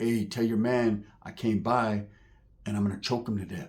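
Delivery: calm, very quiet, very low threatening voice. Retelling how a man spoke to a woman about her man: imitating a calm threat. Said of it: "he talks to her real calmly".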